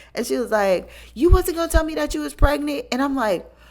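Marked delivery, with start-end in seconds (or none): 1.2-2.9 loud, high, indignant, accusing call-out. Retelling a friend's loud accusation, imitating someone being loud. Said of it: "she was being so loud".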